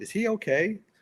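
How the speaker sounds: mock sugary, very high, gentle, super sweet voice. Retelling a kind actress walking over to ask: imitating Sarah Jessica Parker, super sweet. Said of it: "super sweet".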